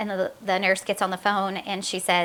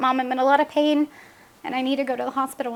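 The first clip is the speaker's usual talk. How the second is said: mock crying child voice, higher; 5 semitones higher than usual. A mother retells her child's call to her, imitating her child crying. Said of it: "and she's crying".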